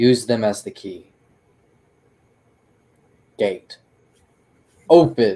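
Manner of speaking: loud boisterous voice. Voicing the dwarf who opens a gate between realms: loud, boisterous voice. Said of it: "in a loud, boisterous voice".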